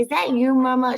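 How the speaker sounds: put-on thrilled, eager child voice. Retelling what the kid asks when the videos come up: imitating an excited kid. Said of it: "She gets so excited and so proud".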